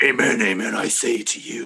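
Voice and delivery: low, devilish holy-man voice. Showing how Jesus sounds when reading scripture: Jesus voice that sounds like Satan. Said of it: "That's Satan. I said Jesus".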